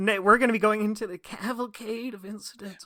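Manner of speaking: grudging, regretful, reluctant, forced-out delivery. Repeating the other speaker's sign-off to tease: imitating someone instantly regretting it. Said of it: "like you're instantly regretting it".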